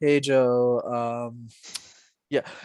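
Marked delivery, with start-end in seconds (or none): 0.0-1.5 deliberately unimpressive, poor speaking delivery, lower pitched. Showing how a bad communicator would sound on a podcast: deliberately unimpressive delivery. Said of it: "I sounded like this".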